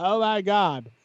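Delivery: put-on high valley girl speech. Explaining different ways to deliver a line for laughs, in a Valley Girl voice. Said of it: "a Valley Girl".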